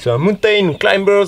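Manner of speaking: finest, showy put-on English accent. Leading a workout, the speaker names the next exercise in an english accent. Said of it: "avec mon plus bel accent anglais".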